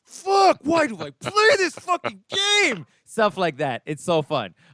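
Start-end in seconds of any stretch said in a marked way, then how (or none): 0.1-2.8 mock shrill, high, swooping, raging furious yell. Speaker describes someone raging at bad luck in a game, imitating angry yelling. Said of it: "starts yelling. He's like".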